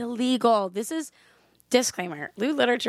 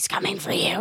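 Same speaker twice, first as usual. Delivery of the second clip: put-on eerie spooky whisper, lower; 6 semitones lower than usual. Acting out scaring the kids at night: acting out a spooky whisper. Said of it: "and I'm gonna whisper".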